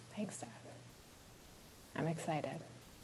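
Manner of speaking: not sounding thrilled. A daughter thanks her dad before leaving, sounding unenthusiastic. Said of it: "You don't sound too thrilled".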